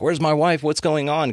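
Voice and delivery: put-on high-pitched screaming in a rushed burst of alarm. Retelling a scene where Morty unplugs from a game: imitating Morty screaming. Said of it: "he's screaming".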